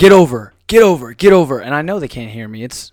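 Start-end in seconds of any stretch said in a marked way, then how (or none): 0.0-1.6 loud yelling, repeated. Retelling yelling at a slow driver from the car: imitating own yelling. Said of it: "I will literally be in my car yelling".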